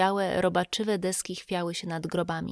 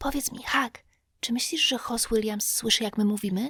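voiced, hushed stage whisper; 3 semitones higher than usual. Tomek to hak after a long silence, whispering. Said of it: "Potem znowu szept Tomka".

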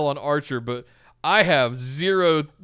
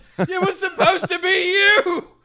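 mock yelling voice, higher pitch. Recalling a backstage promo by imitating Obi-Wan yelling at Anakin. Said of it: "Obi-Wan yelling at Anakin".

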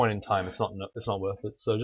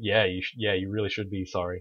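ordinary delivery

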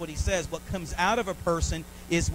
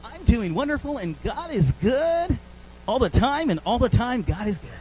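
raised, drawn-out, over-cheery game show host voice; 6 semitones higher, 6 dB louder than usual. Speaker mimicking people answering how they are doing, in a game show voice. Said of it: "You get like this game show voice".

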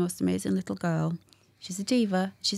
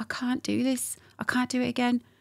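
mock, high, tearful crying; 5 semitones higher than usual. Retelling the moment, the speaker quotes their past self on the floor, imitating crying. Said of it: "I fell on the floor crying, going".

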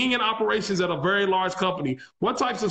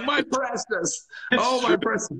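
slow character voice, each word stretched out; 4 semitones higher than usual. Comparing old coin holders to a character: Gollum voice. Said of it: "old school holder is like Gollum".

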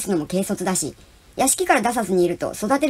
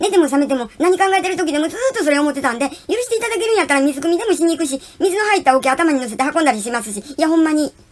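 very fast, pitched-up, rattled-off torrent of words; 7 semitones higher, 3 dB louder than usual. Reading a character's words in a story, speaking even faster. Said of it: "と一段と早口になって喋るのでした".

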